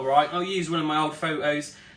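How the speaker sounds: ordinary talk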